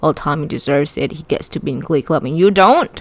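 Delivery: ordinary delivery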